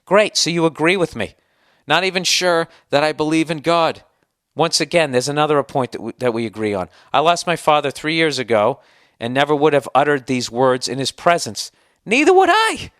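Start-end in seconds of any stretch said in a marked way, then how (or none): 12.0-12.8 voice suddenly leaping very high. On a podcast, replying to the other speaker, voice jumps up high. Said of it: "Why did my voice go up so high?".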